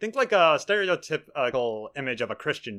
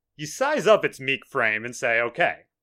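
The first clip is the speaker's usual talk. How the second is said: ordinary delivery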